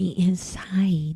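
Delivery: real soft, sweet-talking, hushed murmur. Retelling what the nail tech said while touching his chest: imitating him speaking softly. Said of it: "real soft".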